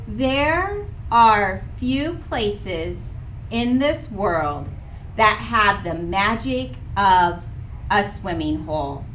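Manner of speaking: slow, careful, deliberate read-aloud voice. Speaker demonstrates reading their own writing aloud with a pen, reading slowly. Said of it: "I read it a little bit more slowly".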